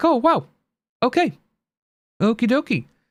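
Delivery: mock sarcastic, dismissive, high sing-song voice. Retelling own reaction to people's posts on Twitter: sarcastic.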